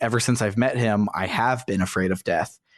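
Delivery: ordinary talk, nothing marked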